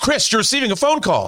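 rushed, very high-pitched, urgent delivery. Reading a ringtone line again after being asked for urgency: urgent.

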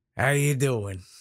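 rough-edged, gruff goblin voice. A game master describing a goblin demolitions expert, showing his gruff goblin voice. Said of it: "real gruff, kind of voice to him".

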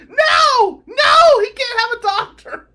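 very high, loud frantic screaming. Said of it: "And his girlfriend screams".

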